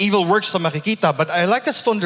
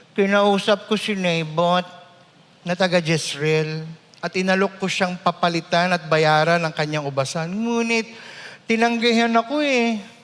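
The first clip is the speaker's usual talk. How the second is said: childlike, childish put-on voice. Acting out a character's first-person lines in a childish accent, not British. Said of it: "sa isang childish accent. Hindi British, childish accent".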